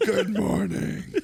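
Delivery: very high, scratchy, rough, creaky raspy voice. Speaker mocks how a trumpet player talks: imitating how he talks. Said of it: "That's how he talks".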